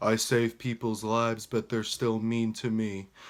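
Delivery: very low, level, flat droning complaining tone. Mocking a film character's complaints: imitating Superman's monotone complaining. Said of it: "complains in his monotone voice".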